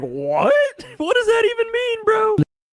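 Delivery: very high, swooping, baffled, incredulous tone. Recounting how a guy reacted to a strange remark: imitating Ian's confused reaction. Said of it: "He makes a face like".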